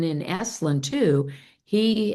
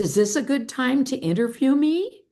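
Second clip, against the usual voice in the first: put-on British accent, lifted higher; 7 semitones higher than usual. Recalling a phone call while sitting on a boat, as Sir John Whitmore's British voice. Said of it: "this British voice says".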